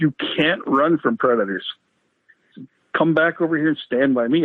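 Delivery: normal talking voice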